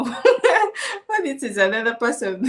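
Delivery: slow, laughing mock disbelief.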